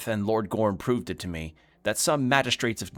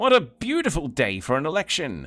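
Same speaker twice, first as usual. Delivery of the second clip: high, showy, put-on fancy-gentleman dandy voice; 7 semitones higher, 4 dB louder than usual. Voicing a fancily dressed character who strikes a pose: fancily dressed Free Strider voice. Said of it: "I forgot what voice I did for him".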